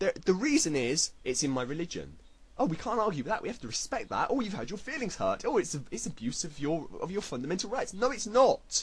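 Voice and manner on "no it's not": fired-up, loud, high-pitched shouting. A speaker ranting to the audience about people like the British National Party, yelling. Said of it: "I'm yelling. I'm yelling".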